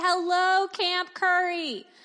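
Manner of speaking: acted-out, put-on yell. Retelling calls between Glacier Point and Camp Curry, imitating someone yelling out. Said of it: "would yell out".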